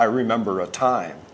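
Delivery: normal talking voice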